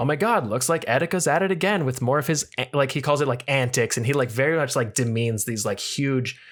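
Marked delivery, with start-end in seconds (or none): 0.0-2.7 put-on offhand, nonchalant, above-it-all commentary voice. Retelling how a YouTuber reported on someone's breakdowns: imitating Keemstar, nonchalant and superior. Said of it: "nonchalantly and very, like".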